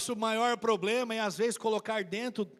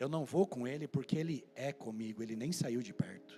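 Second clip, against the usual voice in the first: spoken low and soft, hushed muttering under the breath; 9 semitones lower, 7 dB quieter than usual. Retelling what a woman said as she passed by him, retelling soft speech. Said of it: "e ela falando baixinho".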